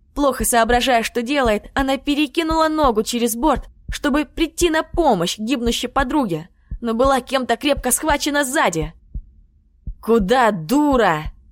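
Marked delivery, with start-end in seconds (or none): 10.1-11.3 annoyed, exasperated, irritated tone. A general grabs a woman climbing over the side, irritated. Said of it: "голос генерала звучал раздраженно".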